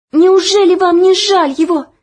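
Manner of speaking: breathless gasping, very high-pitched and loud. A girl pleads with the overseer who is whipping someone, breathless. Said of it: "задыхаясь, проговорила Оля".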